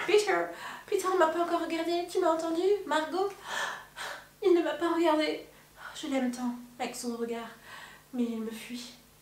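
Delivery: lovesick pining. Acting out a scene of a girl pining for Peter: acting a lovesick girl. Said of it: "Et c'est trop bien fait".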